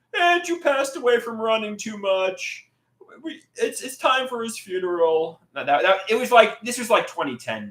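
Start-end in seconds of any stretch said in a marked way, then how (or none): 0.1-5.3 weepy, sobbing, high, tearful crying delivery. Retelling a crying woman's words about a death, imitating someone crying. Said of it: "She's crying".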